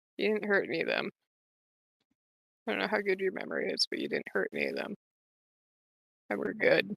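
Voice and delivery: quiet, hushed mutter under the breath. Voicing a character reassuring a friend: muttering under her breath. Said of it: "Cecile will kinda mutter under her breath".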